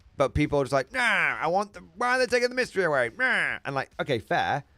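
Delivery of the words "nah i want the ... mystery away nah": goofy, high, silly put-on character voice. Mimicking how people react, silly put-on voice. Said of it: "I'm doing a silly voice".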